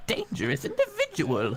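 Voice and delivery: very high-pitched, swooping voice. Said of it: "you sounded like the friggin' Zelda C D I thing".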